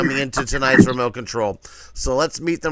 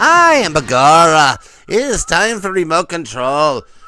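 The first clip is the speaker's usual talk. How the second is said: loud, very bad put-on Irish accent; 2 semitones higher, 6 dB louder than usual. A host opens his own game show in character: very bad Irish accent. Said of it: "I'm doing a very bad Irish accent".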